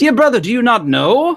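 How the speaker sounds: very high, self-assured, confident announcer voice. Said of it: "Famo would very confidently almost".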